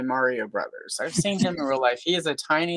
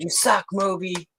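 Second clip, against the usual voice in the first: shout or scream, pitched higher; 5 semitones higher than usual. Retelling yelling at a man in a yard: retelling a scream. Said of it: "and I screamed".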